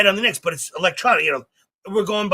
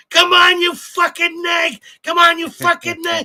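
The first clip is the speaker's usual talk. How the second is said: put-on yell, higher and louder; 12 semitones higher, 6 dB louder than usual. Retelling how a man at the races yelled at the horses on tv: imitating someone yelling at horses. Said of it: "the fuck are you yelling at the horses?".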